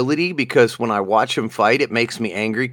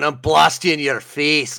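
bad, put-on Irish brogue; 4 semitones higher than usual. Quoting the irish dude's line from the show, in a bad irish accent. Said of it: "we got the Irish dude going".

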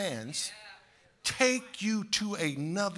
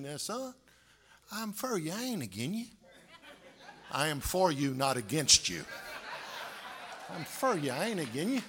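earnest, heartfelt, sincere country dad voice; 3 semitones lower, 4 dB quieter than usual. Retelling what his father would say after a spanking: imitating his father, sincere. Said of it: "He look at you so sincere and he'd say".

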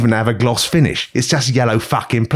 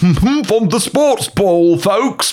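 mocking, high, slow sports-fan caricature; 9 semitones higher than usual. Imitating someone posting about football, mocking a sports fan. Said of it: "I would block someone for going".

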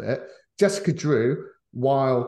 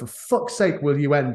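acted-out, annoyed, fed-up, exasperated outburst; 3 semitones higher than usual. Retelling walking out of a film that would not end: retelling an exasperated outburst. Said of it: "I stood up and just went".

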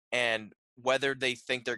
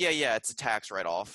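put-on sarcastic tone. Retelling a scene where Tony argues about the art: imitating sarcastic Tony Stark. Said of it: "he's also being his sarcastic self".

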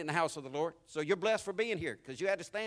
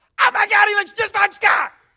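shrill, very loud, high-pitched scream; 14 semitones higher, 17 dB louder than usual. Retelling how mom screamed from across the room: imitating mom screaming. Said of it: "my mom from across the room screamed".

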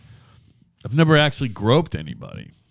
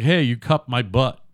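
ordinary delivery

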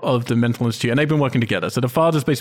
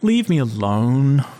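flat, apathetic, couldn't-care-less delivery. Retelling a bad film moment, imitating an apathetic line reading. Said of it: "says so apathetically".

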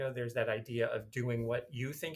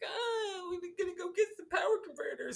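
very high, mocking, badly acted line reading. Mocking an actor's delivery in the first movie: mocking Mark Hamill's Luke. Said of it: "Mark Hamill's terrible in it, right? He's like".

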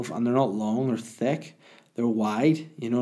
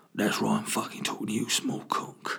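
put-on talking bird voice, sometimes quieter; 6 dB quieter than usual. Acting out a talking bird at the window: Ray Winstone voice. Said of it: "'cause Ray Winston vo-, voices the birds".

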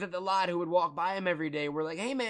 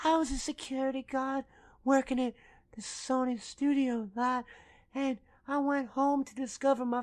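weak, effeminate voice, pitched a bit high; 6 semitones higher than usual. Comparing how men talk, doing Antwone Fisher's half-whispery, effeminate voice. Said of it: "low-key and whispery, but also highly effeminate".

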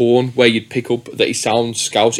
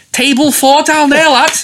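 put-on very high, raised voice in Liverpool Scouse accent; 7 dB louder than usual. Retelling what a man said when he turned round, in a Scouse accent. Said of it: "I don't want to do a Scouse accent".

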